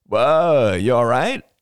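calling out loudly. Dan Arlo checks on Rachel from a distance, calling out. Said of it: "called Dan Arlo".

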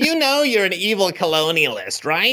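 whiny, pedantic, nitpicking male voice. Performing a requested back and forth: whiny pedantic guy voice. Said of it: "whiny, pedantic guy".

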